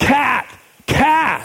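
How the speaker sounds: put-on high-pitched child yelling.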